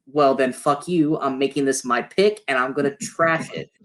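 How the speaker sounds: ordinary talk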